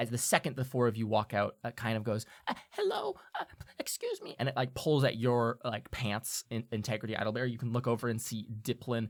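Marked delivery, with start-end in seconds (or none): 2.5-4.4 tiny, very high, piping little voice. A hidden figure beside the door speaks as the four listeners walk out: little voice. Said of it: "you hear a little voice".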